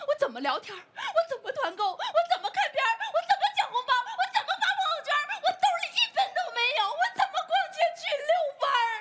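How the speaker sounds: high, fast sobbing wail. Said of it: "别哭了".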